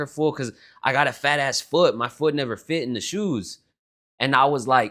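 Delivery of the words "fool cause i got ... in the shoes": ordinary delivery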